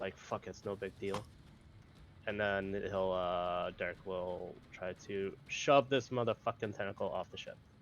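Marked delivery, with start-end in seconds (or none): 0.2-1.2 muttering quietly under breath, quieter. Playing a raging character who heard the captain's words: muttered under breath. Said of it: "under my breath".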